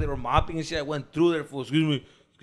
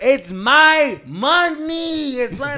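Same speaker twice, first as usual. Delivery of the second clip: very loud, very slow, very high, insistent, drawn-out voice; 11 semitones higher, 9 dB louder than usual. Retelling an argument about money: retelling own voice getting louder. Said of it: "I'm getting louder".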